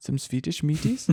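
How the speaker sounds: accent that sounds German. Chatting about car wheels with a co-host, German-sounding accent. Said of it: "That sounded remarkably German".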